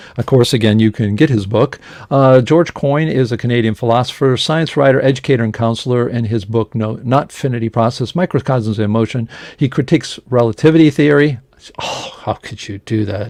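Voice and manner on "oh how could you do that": whispered, hushed, breathy, joking sarcasm. Introducing a guest's book on relativity critiques: sarcastic, joking. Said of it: "a little bit sarcastic there".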